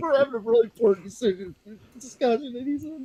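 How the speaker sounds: very high voice, laughter barely held back. Speaker apologizing during a discussion after someone comes in, holding back a laugh. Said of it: "I'm trying not to laugh".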